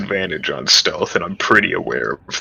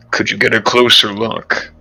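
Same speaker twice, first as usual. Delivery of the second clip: whispering. Asking another player to get a closer look: whispering. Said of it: "I'm going to whisper to".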